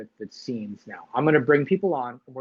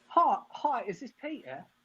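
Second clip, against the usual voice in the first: put-on English accent, pitched higher; 10 semitones higher, 3 dB quieter than usual. Retelling a first phone interview call: imitating Emma's English accent. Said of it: "You said it without a T".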